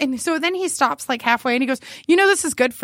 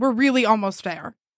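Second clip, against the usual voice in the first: put-on annoyed tone, lower; 5 semitones lower than usual. Retelling what he said while walking to his house: imitating an annoyed remark. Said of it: "he was annoyed".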